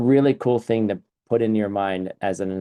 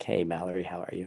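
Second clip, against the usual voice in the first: barely audible, very soft, dry-throated, unintended sultry voice; 3 semitones lower, 11 dB quieter than usual. Retelling walking in and greeting someone who said hello, accidental sexy voice. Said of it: "Using my sexy voice. I didn't mean to use it. My throat is dry".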